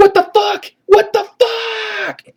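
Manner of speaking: high, slow, wailing, panicked crying. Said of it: "And then he gets".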